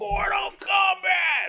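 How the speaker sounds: shrill, very high game-announcer yell. Retelling how the movie opens: imitating the Mortal Kombat announcer shout. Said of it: "it starts off with the guy going".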